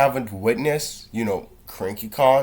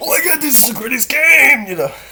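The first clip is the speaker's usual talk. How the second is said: put-on excited yelling, much higher; 12 semitones higher, 6 dB louder than usual. Describing how others yell when a game starts, retelling excited yelling. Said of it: "yelling like".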